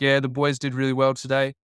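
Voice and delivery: flat, unimpressed deadpan. Retelling a footballer's reply after his best game: deadpan Nick Riewoldt imitation. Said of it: "deadpan despite the greatest achievement".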